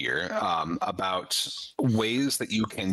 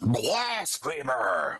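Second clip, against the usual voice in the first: thin, shriveled, shrill voice with swooping pitch; 4 semitones higher than usual. Voicing a priest who catches a player in a tomb: loud booming shrill voice. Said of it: "this, like, loud, booming, shriveling voice".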